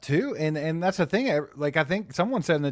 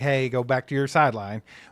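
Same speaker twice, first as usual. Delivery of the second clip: ordinary delivery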